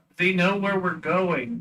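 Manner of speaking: high shout in a character voice. Speaking in character to the others: in-character shout. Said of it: "is what I'll shout".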